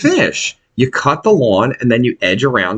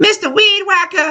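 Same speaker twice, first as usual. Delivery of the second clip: put-on mimicked creepy elderly woman, higher pitch. Retelling what an old woman called out while landscaping: imitating a creepy old woman. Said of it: "That's exactly what she sounds like".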